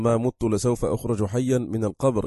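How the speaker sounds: normal talking voice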